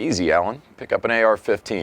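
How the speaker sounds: normal talking voice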